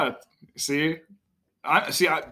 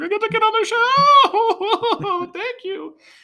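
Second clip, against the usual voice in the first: very high, loud, slow squealed mock excitement, overexcited kid. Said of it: "He didn't actually sound like that".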